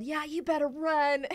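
high, put-on angry shout, temper lost. Retelling losing temper at squirrels scattering underfoot, re-enacting a yell. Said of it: "and I yelled".

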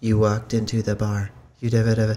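droning, flat, monotone reading with no inflection. Telling others how a reader delivers lines, mimicking a flat monotone reading. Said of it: "she's just so monotone".

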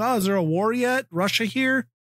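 very high, flippant, teasing, mocking tone. Retelling a YouTuber's videos before a border crossing: imitating Bald and Bankrupt mockingly. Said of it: "kinda mockingly".

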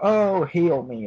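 slow, high-pitched whining voice.

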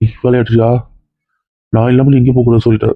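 low, fast, bossy, insistent husband voice.

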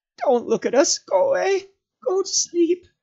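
whimpering, high and loud. Reading Gollum's line as he lies face to the ground: whimpering Gollum voice. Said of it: "he whimpered".

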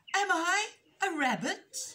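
stammering, shrill, very high and loud. Daily Bee answers Jazzy Dee, who has crept right up to him, in a stammered voice. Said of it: "He stammered".

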